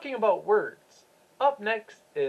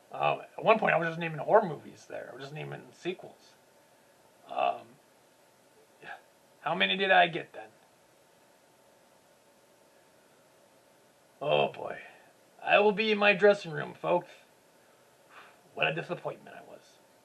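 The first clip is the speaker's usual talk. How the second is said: deep, hesitant swamp-monster puppet voice, full of ums; 5 semitones lower, 3 dB quieter than usual. A puppet swamp monster addresses the audience after a movie-naming game, in swamp monster character voice. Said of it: "I'm [name] the Swamp Monster, / Uh, Jason Goes to Hell, Friday the thirteenth, uh, Child's Play two and three, um, that really bad uh, Captain America movie that came out in nineteen ninety, um, Spawn".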